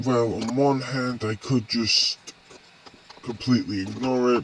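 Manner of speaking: ordinary delivery, nothing marked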